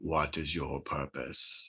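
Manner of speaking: low, slow attempted booming voice. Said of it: "but you hear in a booming voice".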